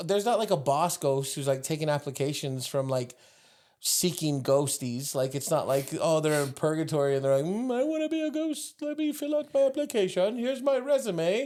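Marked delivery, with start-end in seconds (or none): 7.8-11.5 terrible fake British accent, pitched up. Co-host acting out a ghost in purgatory applying to be a ghost, terrible british accent. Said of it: "Why are they British?".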